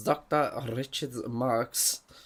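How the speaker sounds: put-on a light touch of German accent. Saying a name aloud to show how it sounds: German twang. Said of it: "just put a bit of a German twang on it".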